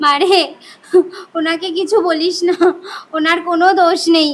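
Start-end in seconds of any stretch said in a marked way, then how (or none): 1.4-4.3 tearful sobbing through the words. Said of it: "মা এরকম কান্না করছে কেন?".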